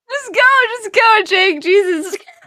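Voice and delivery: very high, slow, drawn-out words through laughter. Urging another player to go on, laughing while talking. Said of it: "You're laughing too loud".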